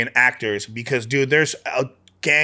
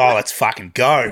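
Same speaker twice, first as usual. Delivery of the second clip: broad, laid-on, exaggerated Australian twang; 3 dB louder than usual. Showing how an Australian would say the phrase; Australian accent. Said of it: "Australian would be like".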